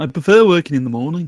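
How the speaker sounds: strong, loud Liverpool accent. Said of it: "You sounded exactly like that".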